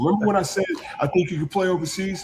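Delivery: mock coach voice, high-pitched screaming. Retelling a coach in his car during morning laps: imitating coach screaming. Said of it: "he's just screaming at me".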